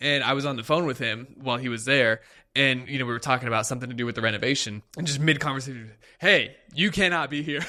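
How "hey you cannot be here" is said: put-on loud assertive shout, higher. Retelling a worker ordering an intruder out: imitating a loud assertive shout. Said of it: "very loud, like, you know, assertive voice".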